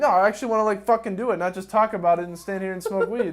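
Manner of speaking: loud frustrated outburst.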